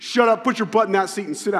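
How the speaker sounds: loud, stern, mean, fed-up scolding tone. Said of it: "He's very mean and stern".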